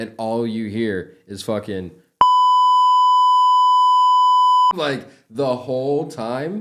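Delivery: high-pitched loud screaming.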